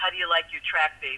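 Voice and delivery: really deep, low voice, dropped way down. Retelling a producer's question on returning to the studio: imitating a deep voice. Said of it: "Ron in his really deep voice says".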